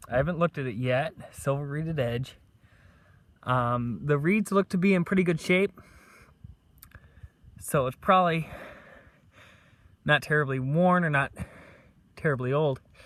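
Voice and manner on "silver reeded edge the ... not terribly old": out of breath, slower. Having just run to a find, describing the coin in the clod, out of breath. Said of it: "Forgive me being out of breath".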